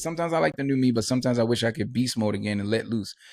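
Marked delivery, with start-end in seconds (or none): none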